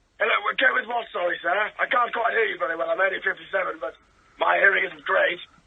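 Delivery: put-on posh voice. Calling in to a radio show as Gary: posh voice. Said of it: "it was a good posh voice".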